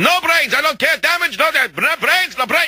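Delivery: put-on high, furious screaming in a Russian accent.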